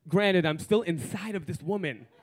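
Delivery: ordinary talk, nothing marked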